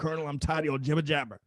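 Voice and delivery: deliberately bad put-on tough-guy boxer voice. Retell your turn at the microphone before a hundred people, addressing the Colonel in a bad Clubber Lang voice. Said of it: "in my worst Clubber Lang voice".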